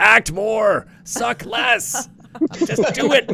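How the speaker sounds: high, barked mock director voice. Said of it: "So it would just be like".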